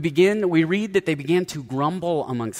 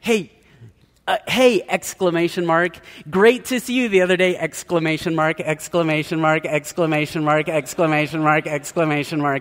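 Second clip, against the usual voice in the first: reading aloud as dictation, punctuation spoken; 3 dB louder than usual. Imitating people who dictate texts into their phones: imitating someone using voice dictation. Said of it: "Have you ever heard people, they'll say".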